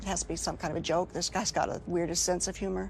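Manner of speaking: normal talking voice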